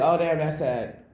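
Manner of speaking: offhand, indifferent tone showing no real care. Retelling how a listener reacted without caring: imitating an uncaring reply. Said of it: "she didn't really look like she cared".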